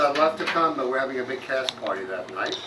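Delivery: normal talking voice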